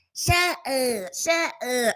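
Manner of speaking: play-acted, high, drawn-out, very sassy delivery. Retelling how a guy in a video kept saying it: imitating a sassy voice. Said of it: "He sounded sassy as hell".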